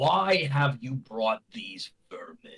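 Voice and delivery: loud, booming, thundering dragon voice. Voicing a dragon speaking from way up above: thundering dragon voice. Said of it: "you hear a thundering voice".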